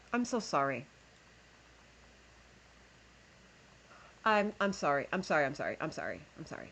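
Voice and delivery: overwhelmed voice near tears, struggling for composure. Apologizing over and over, overwhelmed and trying to compose yourself. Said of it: "Let me let me compose myself real quick".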